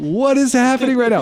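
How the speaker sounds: high-pitched, stunned disbelief.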